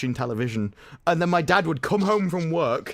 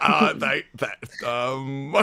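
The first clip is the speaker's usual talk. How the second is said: put-on flustered stammering, lower pitch; 3 semitones lower than usual. Imitating Mike being made uncomfortable by a compliment: imitating Mike flustered. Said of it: "if I wanna make him uncomfortable".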